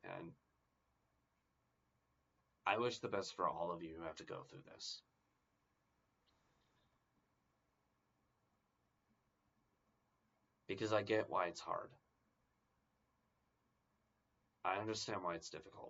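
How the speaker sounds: voice on the verge of crying. Wishing the best to viewers who go through this, on the verge of crying. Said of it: "I'm gonna start crying if I don't stop".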